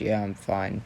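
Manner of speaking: subdued, downcast, low and somber. Narrating a character's answer when asked if he's alright, in a somber tone. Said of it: "in this kind of somber tone".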